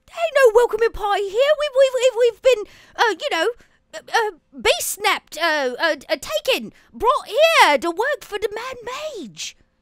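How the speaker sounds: put-on very high-pitched, stumbling Cockney accent patter. A mimic chest in the corner talks to the party in a Cockney British accent. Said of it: "in this kind of really, you know, Cockney British".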